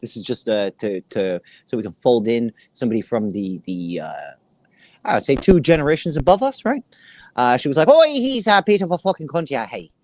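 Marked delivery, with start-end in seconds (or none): 7.9-9.8 put-on Irish accent, laid on full, sing-song. Retelling what their grandma said about someone, in an irish accent. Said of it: "Went full Irish".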